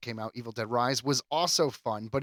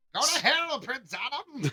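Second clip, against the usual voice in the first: very high-pitched, drawn-out, stretched villain voice; 13 semitones higher than usual. Imitating Mark Hamill's cartoon villain line: high-pitched Skeletor voice. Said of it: "the really high pitch".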